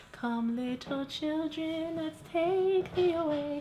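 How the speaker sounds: very high-pitched, slow witch voice. Acting out the Hocus Pocus witch calling children: Sarah Jessica Parker witch voice. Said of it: "I'm Sarah Jessica Parker".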